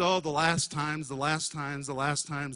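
usual speaking voice

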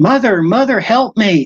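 urgent, high pleading voice. Recounting a childhood assault, re-enacting calling out to their mother: retelling own screaming. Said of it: "I'm screaming out to my mother for help".

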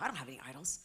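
low, soft, dismissive delivery. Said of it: "You go".

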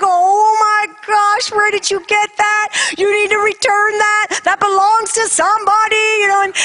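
put-on excited scream, very high. Retelling her reaction when her daughter showed her a turtle, reenacting her own screaming. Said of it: "I'm like screaming because I'm like".

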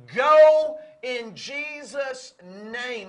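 loud, slow, drawn-out commanding shout.

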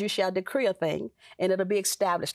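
ordinary delivery

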